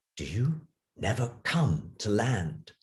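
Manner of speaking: soft, low, quiet voice, kept down. Narrator voicing the boy asking a question, in a low voice. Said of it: "asked in a low voice".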